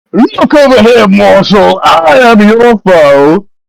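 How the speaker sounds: very high, thundering, booming yell. Narrating a game, a voice from a silver mist yells at the players: booming yell. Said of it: "you all hear a booming voice that yells".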